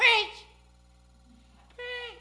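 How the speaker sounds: nice, very high-pitched, nicer-sounding delivery. Repeating a word to show how it sounds, say it in a nicer voice. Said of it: "let me say it in a nicer voice".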